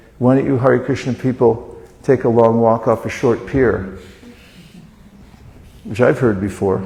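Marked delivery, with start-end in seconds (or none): none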